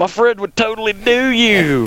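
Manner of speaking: loud, very high call. Reminding the listener what they said leaning out the window: retelling a fairly loud remark. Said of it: "say in a fairly loud voice".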